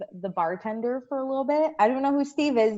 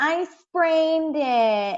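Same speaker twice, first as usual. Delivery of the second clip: pitched-up voiced woman's voice; 6 semitones higher, 3 dB louder than usual. Retelling how a woman answered a question about her foot: impression of the woman with the hurt foot. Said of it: "perfect impression".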